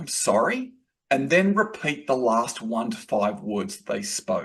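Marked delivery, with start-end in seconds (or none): 0.0-0.7 "sorry" said with a rising inflection at the end. Advising how to answer without going on the defensive: rising on sorry. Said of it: "with an upward inflection".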